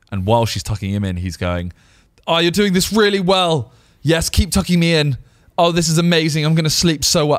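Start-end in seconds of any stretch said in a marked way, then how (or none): 2.2-7.4 mock loud, high-pitched gushing chatter. Retelling a husband on a plane praising being tucked in: imitating someone talking loudly. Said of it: "he's talking that loud on a plane".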